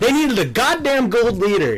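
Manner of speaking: exasperated rant.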